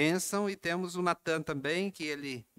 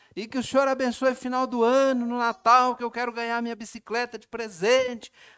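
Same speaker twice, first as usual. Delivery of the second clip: put-on loud, high child's voice, hollering; 8 semitones higher, 8 dB louder than usual. Retelling a little boy's bedtime prayer, imitating a child shouting. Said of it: "E gritando, falando bem alto".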